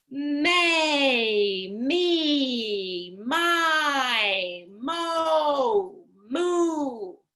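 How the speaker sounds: loud, confident projection, very slow, me drawn out. Leading the may-me-my-mo-moo drill, the speaker says it with intent: loud and confident. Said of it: "you sounded confident and loud".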